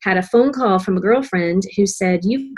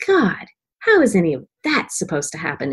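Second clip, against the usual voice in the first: play-acted, heavy, dripping sarcasm with swooping pitch. Retelling getting sarcastic with God, re-enacting a very sarcastic remark. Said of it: "very sarcastic".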